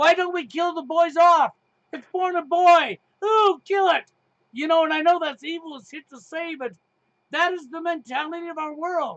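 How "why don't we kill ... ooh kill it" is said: loud, high-pitched, sarcastic jab. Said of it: "get sarcastic and say".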